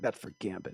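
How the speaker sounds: mock muttering under breath. Retelling own remark during a scene after farting: imitating muttering under breath. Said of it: "I said that under my lips".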